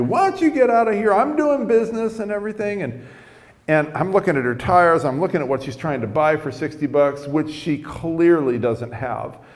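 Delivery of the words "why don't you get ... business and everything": put-on high, fast, angry old man yelling. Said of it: "he starts yelling at me".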